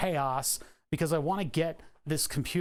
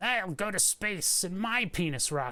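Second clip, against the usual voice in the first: put-on cackling voice; 3 semitones higher than usual. Imitating Jeff Bezos launching into space: cackling Jeff Bezos impression. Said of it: "while cackling".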